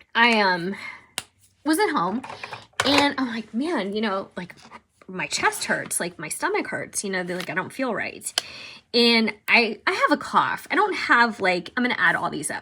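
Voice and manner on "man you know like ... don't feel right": normal talking voice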